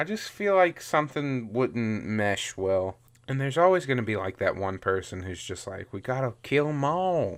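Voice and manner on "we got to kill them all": put-on Southern accent. Imagining the one person in a group who wants to kill them all, southern accent. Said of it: "you like how I gave him a southern accent?".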